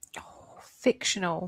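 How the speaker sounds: deflated, soft, breathy half-whisper, disappointed. Hearing the question is about a fictional character, the speaker answers disappointed. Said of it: "you sound disappointed".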